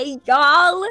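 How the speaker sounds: imitated twang. Trying out Cass's greeting after hearing it: imitating Cass's twang. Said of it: "you sound just like 'em".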